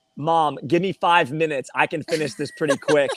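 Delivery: normal talking voice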